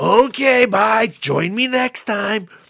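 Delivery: put-on sinister Eastern European accent. Retelling a film, voicing the priest character as the visitors leave: mock-creepy Eastern European accent. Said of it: "this creepy dude in a priest costume with this crazy Eastern European accent".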